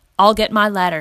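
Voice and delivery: ordinary delivery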